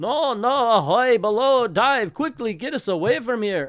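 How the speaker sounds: poor put-on German accent. Reading a comic aloud, voicing the german commander: bad german accent. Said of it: "I can't do German accents".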